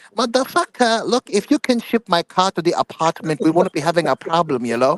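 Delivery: put-on Vietnamese accent. Showing the others how a Vietnamese guy talks: Vietnamese accent. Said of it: "I'm speaking like a Vietnamese guy".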